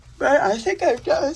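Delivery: high, loud words spoken mid-yawn. Speaker wrapping up for today, yawning. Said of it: "sorry, I'm yawning".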